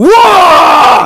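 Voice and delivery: high, loud screaming. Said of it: "I just scream".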